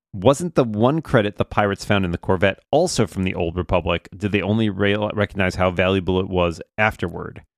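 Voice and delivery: ordinary talk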